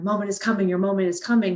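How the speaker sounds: excited, eager, rushed delivery building with anticipation. Showing how to talk to a dog during a stay command; excited, anticipating tone. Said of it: "my tone of voice would have some excitement, some anticipation".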